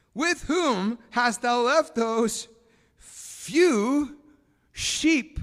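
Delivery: very slow, loud, drawn-out condescending tone. The speaker retells an older brother's question to his younger brother: mock-condescending older brother. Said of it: "Kind of condescending".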